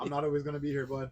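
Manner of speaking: mock yelling. Retelling telling a crying son to learn alone: imitating own past yelling. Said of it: "I'm yelling at them".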